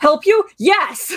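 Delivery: play-acted, unsubtle, high, sudden scream. Recapping an episode, a speaker acts out a character's answer to her question: retelling a scream. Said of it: "he just screams at her".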